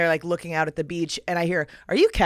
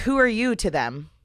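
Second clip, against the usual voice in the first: aggressive tone, higher; 4 semitones higher than usual. Retelling what she asked the speaker: imitating an aggressive question. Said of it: "It was aggressive energy".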